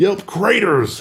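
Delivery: "craters" high, slow, stretched out dramatically. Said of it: "What an amazing word".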